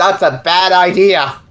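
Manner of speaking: slow, light, called-out voice. Voicing a character who warns the others off the mushrooms: yelling in character. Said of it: "I'm yelling".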